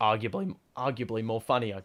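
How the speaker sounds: voice breaking mid-phrase on "arguably". Speaker discussing an AFL award when the voice cracks. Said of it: "that voice crack was ugly".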